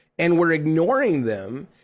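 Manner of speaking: ordinary talk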